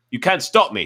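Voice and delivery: sharp, snappish. Reading a story aloud, a woman defying a man: snapping. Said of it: "she snapped".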